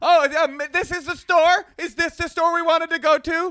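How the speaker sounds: yelled out very high and slow, drawn out. Retelling how Natasha talks to strangers on the street: imitating Natasha screaming. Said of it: "Natasha just starts screaming".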